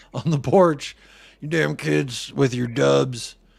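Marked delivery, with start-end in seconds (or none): 1.3-3.3 put-on old man voice. Acting out an old man on the porch scolding kids: old man voice. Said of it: "There's the old man on the counter".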